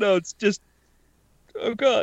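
mock, high-pitched ugly sobbing. Retelling watching the new Queer Eye season: imitating own ugly crying. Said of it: "some ugly crying".

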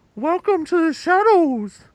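very high, slow voice muffled through cupped hands. Showing how to do a voice by cupping the mouth: muffled through cupped hands. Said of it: "in order to do the voice, you kind of have to cup your mouth like this".

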